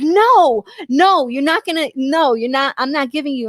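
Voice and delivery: put-on angry, pissed-off voice. Retelling how she refused to share her cigarette, imitating an angry refusal. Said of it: "She's like pissed off".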